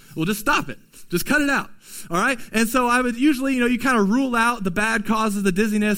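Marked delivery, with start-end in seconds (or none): 0.2-2.4 stern, unmerciful, uncompassionate tone. Acting out a medical provider answering a patient's complaint, mock-uncompassionate tone. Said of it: "said in an uncompassionate, unmerciful tone".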